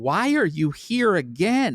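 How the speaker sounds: astonished voice. Retelling the dentist walking in and seeing a patient again: imitating a shocked dentist. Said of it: "she is completely shocked".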